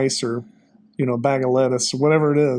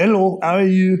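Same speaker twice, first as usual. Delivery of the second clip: clumsy, bad fake French accent, pitched up; 5 semitones higher, 3 dB louder than usual. Retelling a runner greeting you on a trail, in a bad French accent. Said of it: "that's my bad impersonation".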